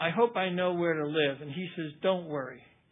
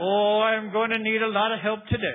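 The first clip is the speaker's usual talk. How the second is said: put-on Irish accent, higher and louder; 5 semitones higher, 7 dB louder than usual. Retelling a priest calling him in: imitating an Irish accent. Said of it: "in this great Irish accent".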